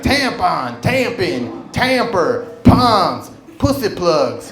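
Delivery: very slow, stretched-out, drawn-out delivery. Retelling saying words while walking down the aisle, pretty loud. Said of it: "I said it pretty loud".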